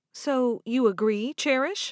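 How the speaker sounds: ordinary delivery, nothing marked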